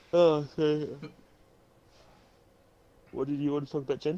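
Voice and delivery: speaking through a yawn. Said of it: "I'm sorry for yawning".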